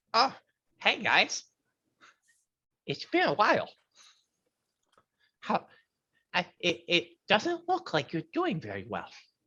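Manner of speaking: high, sing-song voice of a small creature. Voicing a small flying elephant creature greeting the group: small flying elephant creature voice. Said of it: "small-ish flying elephant creature that enters the room and says".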